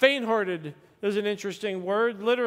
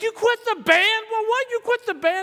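shrill, very high, loud outraged disbelief; 13 semitones higher, 5 dB louder than usual. Retelling the mother's reaction when he quit the band, retelling mother's outrage. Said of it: "she went through the roof".

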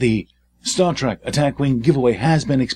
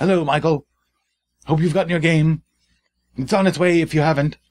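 put-on British type accent; 3 semitones higher than usual. Greeting a giveaway winner by name: british type accent. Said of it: "now I'm slipping into some British type accent".

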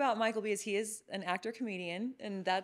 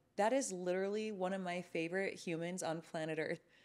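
ordinary delivery

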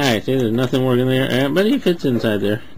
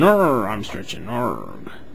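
slow, long, swooping stretching yawn; 3 semitones lower than usual. Showing how Ravage sounds when he stretches, Ravage voice. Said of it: "That's how Ravage sounds when he's stretching".

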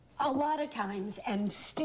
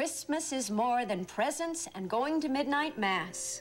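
ordinary delivery, nothing marked

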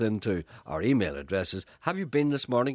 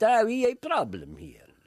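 very high, bad, botched Spanish accent; 12 semitones higher than usual. Retelling what the captain of a Spanish boat said, in a bad Spanish accent. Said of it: "I can't do a Spanish accent".

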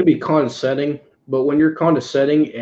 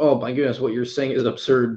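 plain

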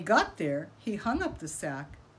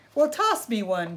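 growly, growling voice; 6 dB louder than usual. Coyote, below the tree, demands that Rabbit toss him a fruit, growling. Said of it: "growled Coyote".

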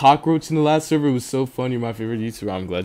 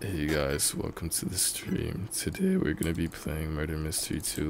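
put-on emo voice; 7 semitones lower, 11 dB quieter than usual. Doing a stream intro after chat asks for one: put-on emo voice. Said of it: "do an emo voice".

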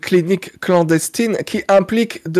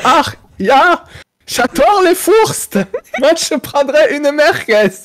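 best put-on German accent, pitched up; 8 semitones higher than usual. Retelling ordering a merguez from skeptical people: put-on German accent. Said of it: "je prends mon plus bel accent allemand".

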